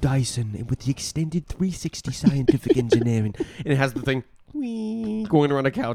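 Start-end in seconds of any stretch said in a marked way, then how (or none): 0.0-3.3 very soft, hushed, barely-there quiet voice. Imitate the man talking about the Dyson so quietly his mic needs a big preamp, very soft Dyson voice. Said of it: "he's like".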